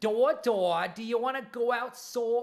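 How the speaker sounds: put-on loud, high, child's near-Boston accent. Speaker imitates their daughter's strange new accent: almost-boston accent. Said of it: "Like it was like almost Boston".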